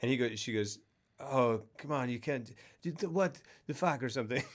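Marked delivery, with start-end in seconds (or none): 1.2-4.4 put-on French-accented actress voice. Retelling a film scene and doing the actress's line as a french actress impression. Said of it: "Great French actress impression".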